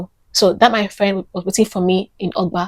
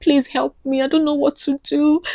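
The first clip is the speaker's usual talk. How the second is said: mock sobbing, tearful crying pleading tone; 7 semitones higher than usual. Retelling begging a friend for help: imitating own past crying plea. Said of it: "as I was crying and wailing".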